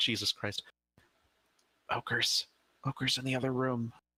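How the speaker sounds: whispering in a put-on character voice. Playing a character warning a companion about ogres: whispering in character. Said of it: "That way she can whisper to him".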